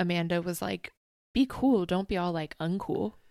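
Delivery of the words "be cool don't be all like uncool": ordinary talk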